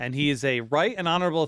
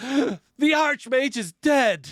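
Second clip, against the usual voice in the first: shrill, very high, loud, alarmed; 11 semitones higher, 5 dB louder than usual. Voicing a servant bursting through doors: bursting in with alarm. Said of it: "Bendel bursts and says".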